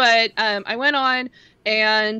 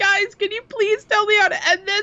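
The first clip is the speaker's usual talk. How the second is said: put-on, very high, laugh-crying, tearful pleading voice; 11 semitones higher than usual. Retelling begging stream chat for help: imitating own laugh-crying plea.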